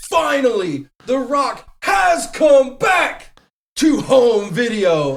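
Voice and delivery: high, slow, booming impression. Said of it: "tried to do an impersonation of The Rock".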